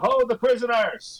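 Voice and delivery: very high, shouted in-character yell. Playing a character calling to the others: yelling in character. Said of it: "he yells".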